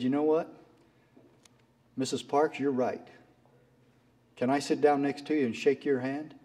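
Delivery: normal talking voice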